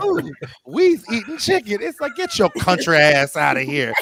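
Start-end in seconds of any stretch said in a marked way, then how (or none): 0.0-1.8 high, pitched-up commercial ad lady voice. Imitating the Popeyes chicken lady from the ads: Popeyes chicken lady voice. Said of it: "She's just like".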